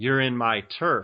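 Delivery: ordinary talk, nothing marked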